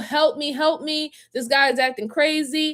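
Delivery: high, held-back, put-on screaming cry. Mocking a dramatic account of being run off the road: imitating someone screaming for help. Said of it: "I'm screaming".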